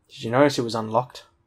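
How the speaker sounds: ordinary delivery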